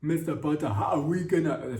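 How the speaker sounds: thick, heavy Nigerian accent. Speaker imagines a new Snape addressing Mister Potter, thick Nigerian accent. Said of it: "a thick Nigerian accent".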